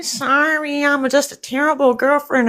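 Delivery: very high, weepy, whiny crying voice. Retelling what a girlfriend kept saying in her videos: imitating someone crying and whining. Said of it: "she was crying and whining".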